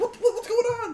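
very high, loud alarm with laughter in it. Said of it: "my mom's like".

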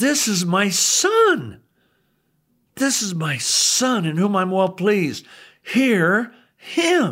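put-on angry weighty pronouncement. Retelling how God spoke from the cloud to Peter: angry voice of God. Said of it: "the angry voice of God says".

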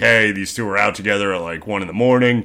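ordinary talk

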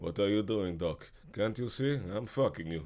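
Bulgarian voice-over dub style. Imitating a voice dubbed over a film, in a Bulgarian dub voice. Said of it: "this Bulgarian voice like".

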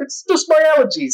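very high, squeaky, wide-swinging defensive voice.

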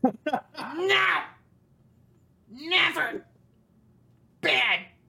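very high, creepy creature voice going way up. Reacting to another player's character choice, Gollum voice. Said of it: "This is the second Golem impression tonight".

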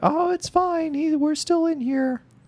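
drawn-out, slow, very high woman's voice. Retelling a movie scene, a prisoner answers a guard by mimicking the woman's voice. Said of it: "does a voice like".

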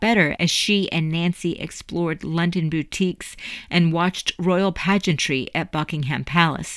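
plain

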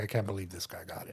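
soft, unvoiced whisper under the breath.

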